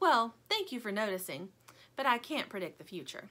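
ordinary delivery

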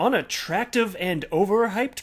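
"overhyped" said with a questioning rise. Reading a crypto news headline aloud as a question, rising pitch on overhyped. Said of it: "my voice goes up like that to indicate a question".

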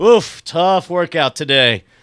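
loud, drawn-out, put-on passive aggressive guilt-laying tone. Acting out coming home to a kid, passive aggressive dad. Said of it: "I'm passive aggressive, I'm like".

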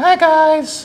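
very high put-on female voice. Showing off a 3d-printed female figure, giving it a put-on female voice. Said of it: "In my best female voice I can do".

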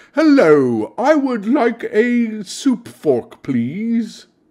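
eloquent, prim, high-pitched debutante voice. Told she sounds unrefined, the speaker shows off an eloquent debutante voice. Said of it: "I speak like an eloquent debutante out on the town".

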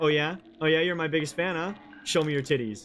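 ordinary talk

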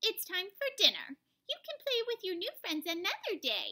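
high, cooing voice. Old Lady Who scoops up her cat Muffins and talks to him, cooing. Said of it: "she cooed".

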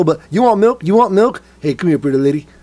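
put-on folksy politician voice. Joking about a president leaving kindergartners: bad George Bush impression. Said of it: "I can't do the George Bush impression very well".

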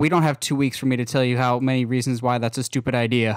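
flat, deadpan character voice. Retelling a scene's reply to a plan about moving the Earth, deadpan Superman voice. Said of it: "completely deadpan goes".

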